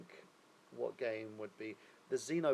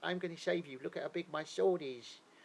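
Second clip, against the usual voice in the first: exaggerated comedic put-on Cockney accent, pitched up; 6 semitones higher than usual. Speaker imitating how a game hero talks: Cockney accent. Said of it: "doing a Cockney accent".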